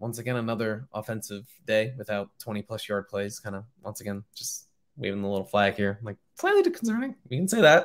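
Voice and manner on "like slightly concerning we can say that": very high, swooping, nervous voice. Reviewing Penn State's offense after a game, nervous high voice. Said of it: "My voice gets high because I'm nervous".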